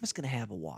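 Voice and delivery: very quiet, hushed, knowing, conspiratorial tone. Showing how the drink order is told to staff: conspiratorial knowing tone. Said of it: "I squint my eyes and I kinda bob my head".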